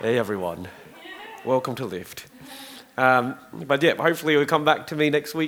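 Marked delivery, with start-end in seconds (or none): 0.0-2.2 very low, soft, hushed, sultry put-on sexy voice. Apologizing for a lost voice, the speaker tries out a put-on sexy voice. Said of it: "this is my sexy voice".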